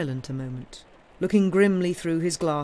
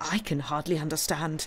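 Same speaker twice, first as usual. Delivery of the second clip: ordinary delivery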